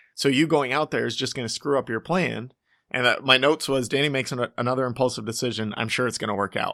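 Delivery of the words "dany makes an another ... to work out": ordinary talk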